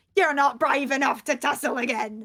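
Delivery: strained, effortful speaking voice. Voicing a restrained captive taunting a player: straining while speaking. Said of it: "Dash kinda strains and goes".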